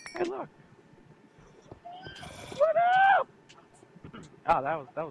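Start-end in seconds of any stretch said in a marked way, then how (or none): 0.2-3.3 cracking voice, much higher, louder. Spotting a skeleton and greeting it, voice cracking. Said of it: "My voice just cracked".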